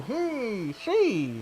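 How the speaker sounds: put-on high old-time radio announcer voice. Speaker recalling voices they have done before, in an old-timey radio voice. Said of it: "I guess I've done old timey radio".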